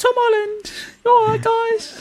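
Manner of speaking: put-on British accent. Showing how to do the accent by speaking higher, in a bad British accent. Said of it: "Why are we doing bad British accents".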